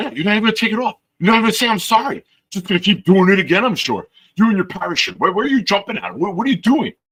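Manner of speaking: very high, ranting, scolding yell. Retelling a subway scene where a man yells at a lady: imitating a man yelling. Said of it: "There's a guy yelling at the lady".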